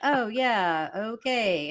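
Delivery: acted wooden, flat, affectless, feeling-free delivery. Imitating an actor reading his lines: imitating a flat, affectless line reading. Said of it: "No affect in his voice".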